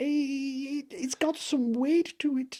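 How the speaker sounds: deliberately bad, very high Scottish accent. Retelling a fishing trip, quoting a man reeling in a fish, really bad Scottish accent. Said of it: "I'm gonna do a really bad Scottish accent".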